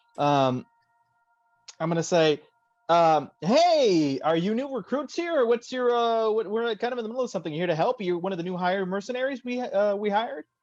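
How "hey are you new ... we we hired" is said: forced cheery, pitched-up voice through a big fake smile. Greeting two armed strangers in character, speaking through a big fake smile. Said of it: "hurt my jaw trying to smile".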